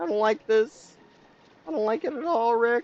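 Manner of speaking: very high, squeaky cartoon character voice. Speaker breaks into a Morty impression, addressing Rick. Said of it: "I gotta stop with the Rick and Morty impressions".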